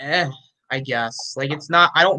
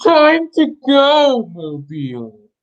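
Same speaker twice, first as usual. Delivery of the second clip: loud, booming villain voice with big pitch swoops; 8 semitones higher, 5 dB louder than usual. Repeating a message someone sent in, in a Bane voice. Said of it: "in Bane voice".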